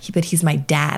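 ordinary talk, nothing marked

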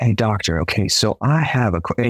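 hushed, nearly whispered. Retelling how a dog owner asks the doctor a question, almost in a whisper. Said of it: "He's like almost in a whisper".

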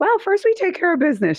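put-on sweet voice. Quoting a friend's answer about what she did with her kids: sweet voice imitating Kathleen. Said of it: "She has this really sweet voice".

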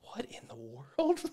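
slow, hushed whisper. Retelling a film moment where Andrew leans in: imitating Andrew whispering. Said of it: "leans in and whispers".

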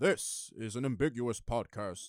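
godlike, voice-of-God announcer voice. Imitating the podcast intro's narration: imitating a voice like god. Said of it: "you sound like God himself".

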